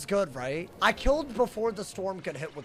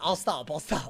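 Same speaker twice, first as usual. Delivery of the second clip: normal talking voice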